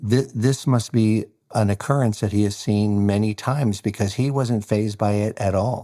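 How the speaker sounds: plain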